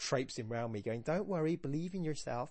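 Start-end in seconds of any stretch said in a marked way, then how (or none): 1.0-2.5 put-on, upbeat American accent. Speaker imitating a cheerful person reassuring them, in an American accent. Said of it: "I don't know why I did an American accent there".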